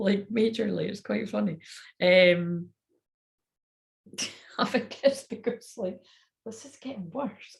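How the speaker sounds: laughing and giggling while talking. Pausing while working out timing, laughing while talking. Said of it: "I've got the total giggles".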